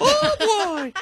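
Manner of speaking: very high-pitched cartoon mouse voice. On a call-in show, a co-host jokes about talking like Mickey: Mickey Mouse voice. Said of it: "I want everybody that calls in to talk like Mickey now".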